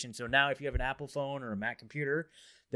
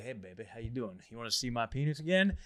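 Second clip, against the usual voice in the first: cheesy, swooping, fake flirty voice. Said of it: "I would not use that pickup line".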